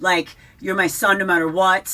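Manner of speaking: ordinary delivery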